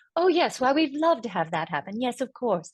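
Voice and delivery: put-on old Hollywood film accent. Showing how the voice was done, old movie accent. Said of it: "You're just trying to sound kind of like the old movies".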